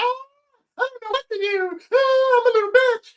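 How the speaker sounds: play-acted very high, sniveling, whiny voice. Retelling how the pretty kid sat in the corner: imitating someone whining. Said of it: "He was in the corner bitching".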